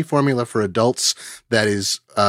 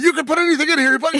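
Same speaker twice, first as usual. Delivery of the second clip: acted, very high, screaming infomercial salesman voice; 3 dB louder than usual. Retelling an old infomercial juicer demonstration: imitating someone screaming. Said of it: "he starts screaming".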